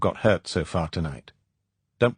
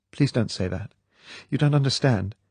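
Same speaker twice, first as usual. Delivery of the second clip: soft, desperate, pleading voice, higher; 4 semitones higher than usual. Reading a scene where she pleads with Bond: soft, desperate voice. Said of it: "There was an edge of desperation in the soft voice".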